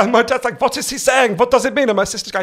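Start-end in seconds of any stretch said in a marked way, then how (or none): 0.6-1.9 put-on strong German accent. Quoting his dad's reaction to how he talks, in a strong German accent. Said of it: "I have this weird posh voice".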